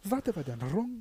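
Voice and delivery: put-on Arabic-French accent with rolled tongue sounds. Repeating the line in a made-up accent, with a rolled R. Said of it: "A fucking super tongue roll in there".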